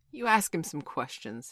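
plain

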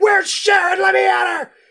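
high, loud shrieking scream at full volume. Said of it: "She's screaming".

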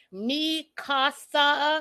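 slow, high, drawn-out, word-by-word careful phrasing. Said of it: "'cause you know how Karen does that".

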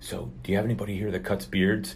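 speaking in a hush. Retelling what he asks at other barber shops, in hushed tones. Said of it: "under my, you know, hushed tones".

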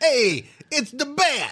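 put-on, loud, very high Brooklyn accent. Redoing the line after being corrected from Boston, in a Brooklyn accent.

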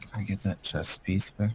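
very quiet, secretive, leaning-in whisper. Leaning in to another character to ask quietly: whispering. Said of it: "can I lean in and I whisper".

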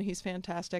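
ordinary talk

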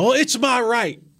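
high, slow, stretched-out protesting cry. Retelling how a maskless woman reacted when told to leave a federal building, retelling a woman's scream. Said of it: "She screams".

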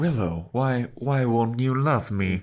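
mock timid robotic computer voice. Complaining about a character's voice choice, imitating the timid computer voice. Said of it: "really timid computer voice".

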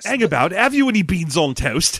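mock, fake, put-on British accent. Playing a stereotyped Briton for laughs: mock British accent. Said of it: "I'm just so British".

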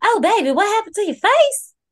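very high, loud, alarmed Southern woman's voice. Retelling what Starla asked back at the house, imitating Starla, alarmed Southern woman. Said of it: "alarmed-ass Southern woman".

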